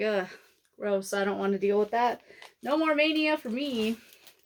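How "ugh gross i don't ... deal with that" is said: usual speaking voice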